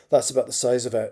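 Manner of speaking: plain reading voice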